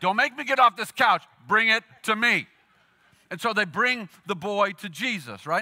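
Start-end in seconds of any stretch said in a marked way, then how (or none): 0.0-2.5 loud, fed-up, exasperated dad voice. Retelling how a dad answers a child's protest from the couch: imitating a dad's voice. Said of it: "dad is like".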